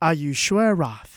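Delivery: deadly calm, dead-serious tone. Charlie asks Roth whether he is sure, in a deadly calm, deadly serious tone. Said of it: "in his deadly serious, deadly calm tone of voice".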